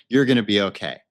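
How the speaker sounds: play-acted low, irritated, put-upon tone. Retelling what an angel said to a friend, imitating an annoyed voice. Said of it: "with kind of an annoyed voice and expression".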